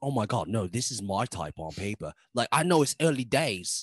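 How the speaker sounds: imitated, put-on British accent. Imitating a new girl on a dating show: put-on british accent. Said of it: "What accent is that".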